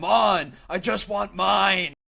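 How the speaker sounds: high, long drawn-out screaming. Retelling a stump segment that turns serious: imitating Shane screaming. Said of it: "he's just screaming at them".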